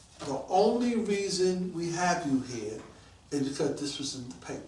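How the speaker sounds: ordinary delivery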